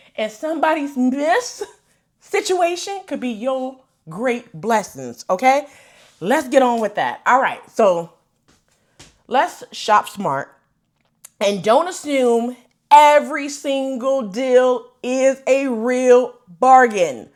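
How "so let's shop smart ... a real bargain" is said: slow, measured, weighted, deliberate, word by word. Giving viewers a shopping tip she wants heard, slow and deliberate. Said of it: "I said that slow".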